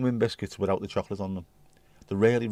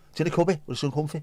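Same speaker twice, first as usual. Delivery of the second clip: put-on ridiculously thick, fast Scouse accent; 7 semitones higher than usual. Retelling a liverpool man's words, in a ridiculously thick scouse accent. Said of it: "had the most ridiculously thick Scouse accent".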